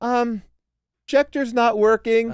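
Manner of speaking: small, high, slow, drawn-out tiny voice. Retelling a backstage mishap during a show: imitating a little voice. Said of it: "this little voice go".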